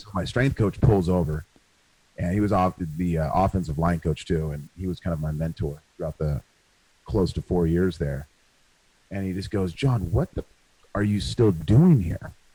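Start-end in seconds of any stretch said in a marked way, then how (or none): 9.7-12.3 mock-mean, harsh scolding tone. Retelling how his strength coach confronted him, imitating a mean scolding. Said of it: "said it in such kind of like a mean way".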